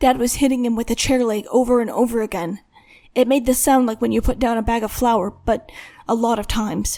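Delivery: ordinary delivery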